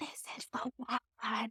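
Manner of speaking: very quiet, breathy, slow, hushed whisper. Retelling a remark made during a venue tour: imitating own whisper. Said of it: "I whispered to her".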